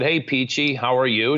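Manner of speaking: acted smart-aleck, wisecracking tone. Speaker retells greeting the new receptionist at work, in his smart-aleck voice. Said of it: "in my smart aleck voice".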